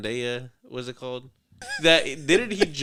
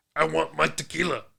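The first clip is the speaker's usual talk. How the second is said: put-on monster voice, higher; 3 semitones higher than usual. Imitating The Rock asking for tequila: The Rock impression like Cookie Monster. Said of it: "why does he sound like the Cookie Monster?".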